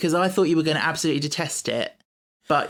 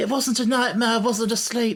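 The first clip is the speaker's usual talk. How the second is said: put-on high, funny, cute little boy voice; 7 semitones higher than usual. Retelling a show scene, speaker quotes a boy answering his dad, funny little boy's voice. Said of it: "he's got the funniest little voice when he's like".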